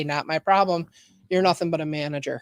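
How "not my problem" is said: ordinary delivery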